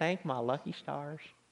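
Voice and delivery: put-on Southern accent. Telling a story about a woman you knew, repeat her phrase in an imitated Southern accent. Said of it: "She kind of had this Southern accent".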